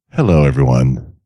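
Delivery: low-pitched voice. Co-host greeting listeners at the start of the show, very low voice. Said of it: "My voice is very low today".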